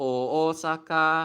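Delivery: Osaka with first syllable low, the rest high. Describing the pitch pattern of the name: low first syllable of Osaka. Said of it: "It's like low, high, high, high".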